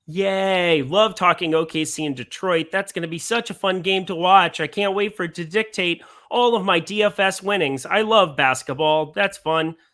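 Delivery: mock-excited sarcasm. Previewing the OKC–Detroit game for DFS players, with sarcastic mock enthusiasm. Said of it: "That was sarcasm".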